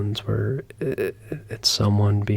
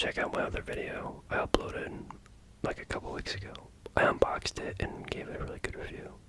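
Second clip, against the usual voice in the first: hushed, very quiet, breathy ASMR-style whisper. Talking to viewers in a half-asmr camera video, whispering. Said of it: "if you want to know why I'm whispering".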